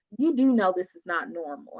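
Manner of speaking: ordinary talk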